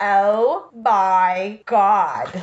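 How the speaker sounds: very slow, every word stretched out, laughing.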